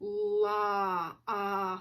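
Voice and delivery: slow, drawn-out sounding out, sound by sound. Leading listeners through long and short vowel sounds, sounding out slowly. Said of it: "Let's say this one slow".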